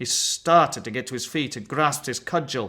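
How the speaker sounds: ordinary delivery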